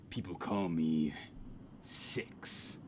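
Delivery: very low, slow put-on tough voice. Reading a line aloud in a badass voice. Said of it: "let me read this in a badass voice".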